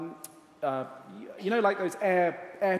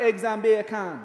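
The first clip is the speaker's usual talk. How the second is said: put-on speaking with Guyanese accent; 3 semitones higher, 6 dB louder than usual. Imitating a friend from Guyana for the audience: put-on Guyanese accent. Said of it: "that's exactly what he sounds like".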